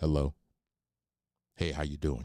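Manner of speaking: deep, very low, sultry voice. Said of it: "the sultry voice that I used to use in the Navy".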